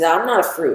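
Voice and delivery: plain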